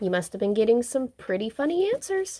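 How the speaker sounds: doubtful, probing, suspicious tone. Sister doubting his excuse about the giggling phone call: suspicious. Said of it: "she said suspiciously".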